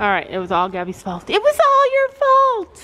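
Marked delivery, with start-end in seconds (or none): 1.3-2.7 high, slow, drawn-out, sarcastic mock-accusing tone. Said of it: "she knows I'm being sarcastic".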